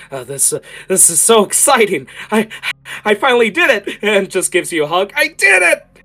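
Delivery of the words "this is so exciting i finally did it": mock excitement, jumpy, much higher, louder. Speaker acts out what they say when pulling you back, acting out excitement. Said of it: "they are jumping with excitement".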